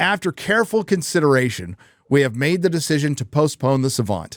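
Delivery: plain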